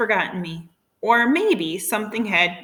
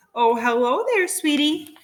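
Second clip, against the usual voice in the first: affectionate, endearing, sweet cooing; 6 semitones higher than usual. Reading a story, a woman greets a dog: cooing. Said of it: "cooed a voice".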